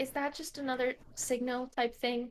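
soft, hushed, half-whispered aside. Half-whispering a question to another character about a signal type thing: half-whispering. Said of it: "whisper to him".

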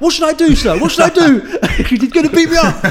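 put-on terrified voice. Retelling begging the teacher while being chased in class, retelling terrified pleading. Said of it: "like genuinely terrified".

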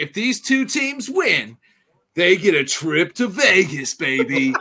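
hyped, drawn-out sports announcer voice with fake enthusiasm. Talking with others about an announcement, in an announcer voice. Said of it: "I love your announcer voice".

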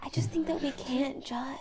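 soft whisper. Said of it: "As, as you're sort of whispering all this".

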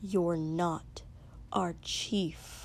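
low, quiet, hushed voice. Narrator reading Izuku's line to Katsuki: low, quiet voice. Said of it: "said in a low, quiet voice".

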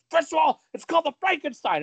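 shrill, very high, loud, furious outburst. Retelling how a wrestler got mad about a move: imitating an angry Scott Steiner. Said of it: "Scott Steiner got so fucking mad".

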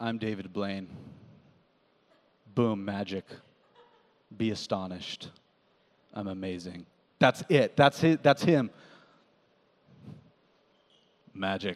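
very low, hushed, deadpan flat droning monotone. Speaker describing a magician whose specials he watched, flat monotone David Blaine impression. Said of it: "he's so monotone. He's just like".

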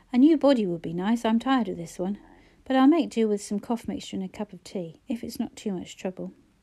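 ordinary delivery

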